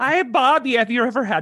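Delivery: high, loud, bad mock Wisconsin accent sounding Irish.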